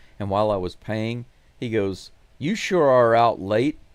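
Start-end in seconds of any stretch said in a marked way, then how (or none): 2.4-3.7 mock pointed, accusatory, suspicious tone. Retelling what a security guard said at the checkout late, mock-accusatory voice. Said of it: "in a real accusatory voice".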